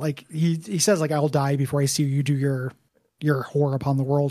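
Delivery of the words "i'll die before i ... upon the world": usual speaking voice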